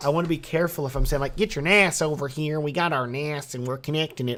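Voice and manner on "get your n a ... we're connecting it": full, strong country Texas accent. A Texan speaker demonstrates a phrasing they avoided saying, in a Texas accent. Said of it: "with me and my Texas accent".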